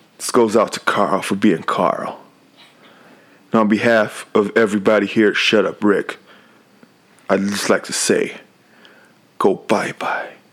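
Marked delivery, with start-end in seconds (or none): 9.4-10.3 fake whisper, quieter. Signing off to everybody at the end: put-on whisper. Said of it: "weirdest thing to have whispered into your ear".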